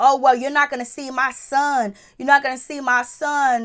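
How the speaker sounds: acted, furious, angry screaming and yelling. Retelling what a woman screamed during an argument, retelling a yell. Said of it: "She's yelling. She's screaming at".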